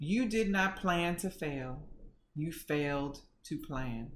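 kind, gentle, soft motherly voice. Retelling what mom said about being dismissed: imitating mom saying it gently. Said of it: "And she said it so gently".

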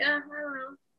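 put-on speechless, hesitant, fumbling delivery. Retelling a movie scene of a sister caught out: imitating Kitty being speechless. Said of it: "she was kinda, like, speechless".

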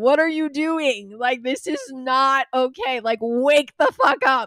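exasperated, high, loud scolding yell.

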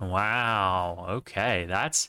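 disappointed. Reacting to another speaker saying sprinkles aren't that great: disappointed. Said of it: "You sound disappointed".

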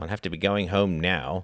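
ordinary delivery

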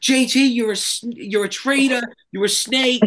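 put-on Long Island accent. Voicing fans who still call JT a traitor, in a Long Island accent. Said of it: "a Long Island accent".

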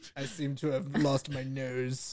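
put-on old politician voice. Retelling a friend's call done in his best Winston Churchill voice. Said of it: "in his best Winston Churchill voice".

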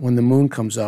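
low, growly wolf man monster voice.

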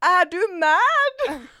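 very loud, shrill yell with mad stretched. Retelling ordering food with a friend, imitating a guy's yell. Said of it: "och då skriker han så här".

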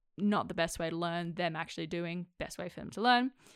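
ordinary delivery

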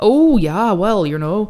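put-on Wisconsin accent with Wisconsin vowels and tune. Trying out accents this episode, a speaker slips into a Wisconsin accent. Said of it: "Is that Wisconsin?".

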